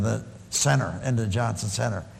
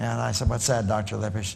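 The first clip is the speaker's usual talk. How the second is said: normal talking voice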